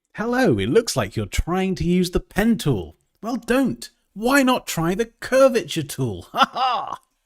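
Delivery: really over-the-top English accent, high and swooping. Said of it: "a really overly English accent".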